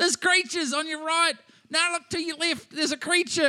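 mock very high-pitched screaming. Retelling a director on set shouting directions at actors: imitating Peter Jackson screaming. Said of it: "Peter Jackson screaming at them".

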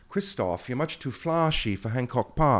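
put-on delivered in a British accent. Quoting what an old manager used to tell him, in a British accent. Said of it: "With that exact accent".

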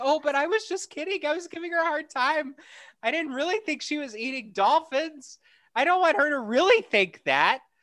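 high apologetic tone.

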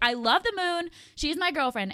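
mock all-out yelling, loud and high-pitched. Recalling yelling in public at a rooftop bar: retelling own yelling. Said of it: "I'm like yelling".

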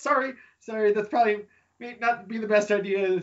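put-on sniffling voice. Voicing Sarissa Windhello apologizing to a fellow newcomer, still sniffling after crying. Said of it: "She's not crying anymore, but she's still sniffling a little bit. She seems kind of oblivious to your presence at the moment".

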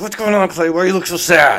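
put-on gritted-teeth voice. Retelling what a guy said to him, imitating talking through clenched teeth. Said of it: "he always talked with his teeth".

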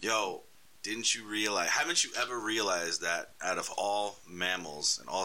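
ordinary delivery

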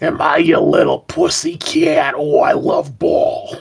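exaggerated bad dub voice, creaky and raspy. Asked if Iceman still sounds like this as a kitty cat, in exaggerated bad Iceman dub voice. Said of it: "Does Iceman still sound like this".

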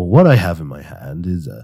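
best radio announcer voice. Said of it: "I was trying to do my best radio voice".

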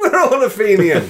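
high-pitched, loud, laughing squeal.

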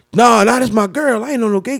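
protesting brush-off tone. Retelling what the man in jail said, imitating the man in jail.

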